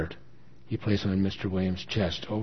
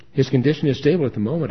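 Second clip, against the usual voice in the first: raised, high, earnest, trying hard to sound convincing; 5 semitones higher, 7 dB louder than usual. On the phone, telling a daughter about her father's condition, trying hard to sound convincing. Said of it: "trying hard to sound convincing".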